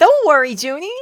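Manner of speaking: loud, high-pitched reassuring tone. Reading a character's line aloud: Harley Quinn voice. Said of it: "summon my best Harley Quinn voice".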